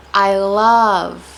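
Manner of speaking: I, love, books, evening stressed hardest. Lesson on which english words get stress: stress on i, love, books, evening. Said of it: "I'm stressing the person who's we're speaking about, I, um, the feeling, love".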